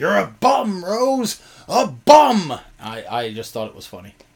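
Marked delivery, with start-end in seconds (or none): 0.0-2.6 put-on very high, very slow, drawn-out jeering scream. Recalling a friend heckling him from the crowd at an Iowa show, imitating Hollinger's heckling scream. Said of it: "just kept screaming".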